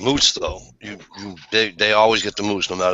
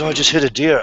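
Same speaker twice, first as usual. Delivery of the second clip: high, tearful, sobbing woman's crying voice; 5 semitones higher than usual. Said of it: "a woman who's crying like somebody just killed her".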